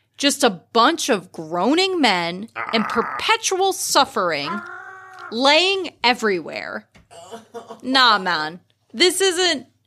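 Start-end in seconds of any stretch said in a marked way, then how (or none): 7.8-9.6 put-on sudden switch into a Jamaican accent. Delivering a line in a scene when the accent slips: jamaican accent. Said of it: "I don't know why I got Jamaican there".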